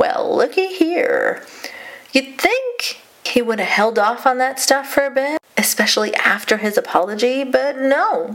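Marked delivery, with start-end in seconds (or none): 0.0-1.4 smug, gloating, self-satisfied voice, pitched up. Quoting what a man said when he quote-tweeted a source, retelling a smug remark. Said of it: "said smugly".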